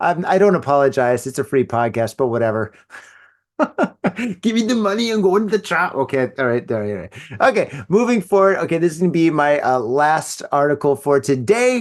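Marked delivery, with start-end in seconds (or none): 3.6-5.9 put-on German accent, much higher pitch. Podcast host doing a joke bit; german accent. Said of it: "the German accent".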